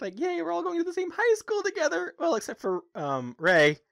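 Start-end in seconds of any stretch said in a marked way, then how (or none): 0.2-2.1 very high, happy, energetic cheering voice. Retelling Sailor Moon's excitement about a shared school: imitating Sailor Moon, happy and energetic. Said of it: "she's so happy and energetic".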